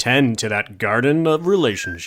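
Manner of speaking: smooth movie-voiceover voice. Trying to duplicate the other speaker's voice, say it in a buttery movie-voiceover voice. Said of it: "I'm trying to do my buttery voice".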